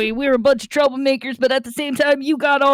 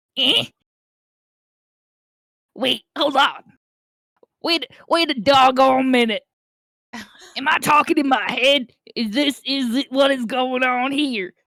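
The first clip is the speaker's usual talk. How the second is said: goofy, silly put-on made-up creature voice. Doing the voices for a scene, a character reacts, in a put-on funny voice. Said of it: "I'm gonna do this with the fucking voices".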